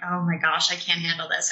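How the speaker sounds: ordinary delivery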